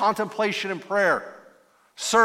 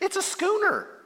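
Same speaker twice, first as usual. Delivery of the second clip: put-on very high-pitched, condescending, know-it-all child's voice; 11 semitones higher than usual. Retelling how a little kid would finally tell the speaker the answer, mock-condescending kid voice. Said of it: "a little kid would condescendingly say".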